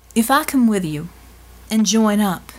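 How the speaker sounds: ordinary delivery, nothing marked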